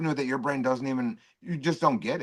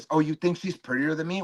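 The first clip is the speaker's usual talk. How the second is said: mock-jealous woman's voice; 2 semitones higher than usual. Arguing with someone, mocking them as a little jealous woman, imitating a jealous woman. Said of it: "like a little jealous woman that goes like this".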